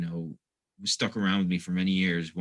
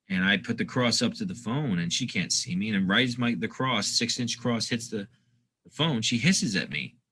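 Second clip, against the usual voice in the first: plain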